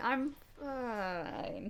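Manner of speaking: voice dying out like powering down, trailing off. Voicing a character whose voice trails off: voice trailing off like shutting down. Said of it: "the end of their voice trails off".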